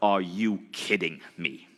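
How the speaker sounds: slow, stern, intense, leaning in hard. Retelling a mentor's reaction to a small profit: imitating Bob Proctor's intense voice. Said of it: "It was more like".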